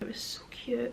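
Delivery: hushed, gushing whisper.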